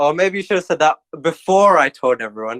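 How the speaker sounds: barbed, pointed, passive-aggressive tone. Retelling own reply to people who backed out: imitating own passive-aggressive reply. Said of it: "passive aggressively".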